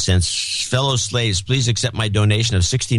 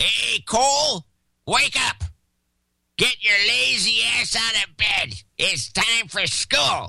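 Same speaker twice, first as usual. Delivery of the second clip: put-on very high, cranky, grouchy old man voice; 13 semitones higher, 4 dB quieter than usual. Asked to redo the line sounding grouchier: grouchy old man voice. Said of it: "say it like the old guy with the kids on the lawn".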